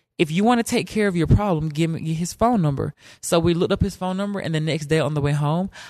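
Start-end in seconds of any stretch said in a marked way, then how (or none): none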